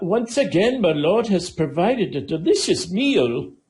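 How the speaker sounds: eager, thrilled, excited high voice. Narrating a game, the speaker voices a severed head addressing the player: rather excited voice. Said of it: "in a rather excited voice".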